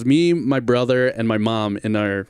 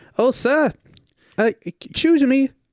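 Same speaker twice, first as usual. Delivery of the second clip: very high-pitched voice, spoken slowly.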